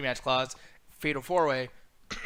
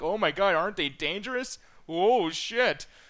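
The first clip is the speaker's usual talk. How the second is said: falsely shocked, mock alarmed tone; 4 semitones higher than usual. Retelling how a commentator reacted to an entrance: imitating JBL acting shocked. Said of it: "he's trying to act like".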